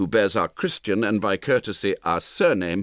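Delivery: ordinary delivery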